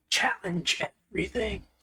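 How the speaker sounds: whispery, slightly high announcer-style slogan voice. Recalling a company slogan someone says whispering, in a whispery slogan voice. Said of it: "Somebody says that in like a whispery voice".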